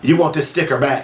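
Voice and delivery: cutting, snide, needling tone. Retelling what a woman said after pulling off the speaker's sticker, imitating a snide voice. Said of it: "with a snide voice and says".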